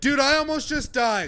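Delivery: high, rattled, shaken yelp.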